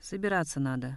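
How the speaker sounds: ordinary delivery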